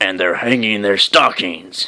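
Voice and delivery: sneering, grouchy snarl. Reading a Christmas story aloud, the Grinch's line in a snarling Grinch voice. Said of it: "I can use my Grinch voice here".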